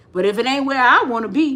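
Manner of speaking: normal talking voice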